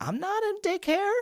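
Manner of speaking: mock exasperated, squealed way up high.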